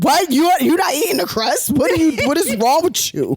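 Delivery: fake mad voice, high. Retelling how Nat reacted to her not eating the crust: imitating Nat getting mad. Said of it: "She got mad".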